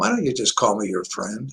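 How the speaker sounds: the gentlest possible voice, very soft. Speaker retells how a woman answered his question about introducing her, gentle voice. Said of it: "in the most gentle voice".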